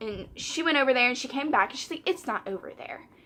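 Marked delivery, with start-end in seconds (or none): 2.1-3.0 mock whispered, breathy, exasperated, aggravated. Retelling what a customer said back at the store: imitating a customer's attitude. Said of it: "she said it, like, this attitude".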